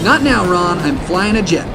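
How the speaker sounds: ordinary talk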